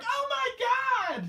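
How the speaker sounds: mock very high thrilled shriek, "my" stretched. Recalling how Carmella leaned forward to scream at the gimmick, imitating Carmella's scream. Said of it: "You remember her screaming like".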